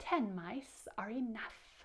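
storybook-style snake voice. Reading a story aloud, asked to say the snake's line; snake voice. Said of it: "could you use a snake voice and say".

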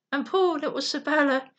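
plain

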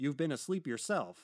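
browbeating tone. The ship's officer questions Rowland in a bullying tone. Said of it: "Asked the officer in a bullying tone".

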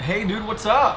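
glad, happy, cheery, cheerful tone. Answering a phone call and greeting the caller, happy. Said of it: "You sound happy".

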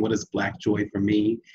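normal talking voice

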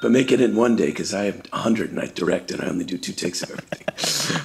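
very low, deep rumble, pitch dropped way down. Doing an impression for others to guess: Clint Eastwood impression. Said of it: "Clint Eastwood".

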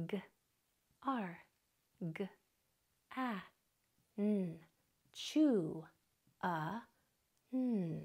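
very slow, sounds linked together in one breath. Demonstrating how to blend the sounds of a word, slow blend in one breath. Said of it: "connect the dots slowly, all in one breath".

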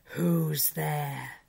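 rough, growled, wolf-like voice. Narrator reads a great wolf challenging someone at the threshold, growling. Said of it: "and growled".

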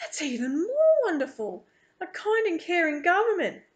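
with a gasp. Reading a first-person story, the narrator reacts to a man's answer: gasping. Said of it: "I gasp again".

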